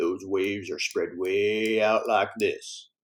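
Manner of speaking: unplanned Southern accent, spoken way down low. Explaining sound frequency and demonstrating with a really low southern voice. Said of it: "if I talk really low like this".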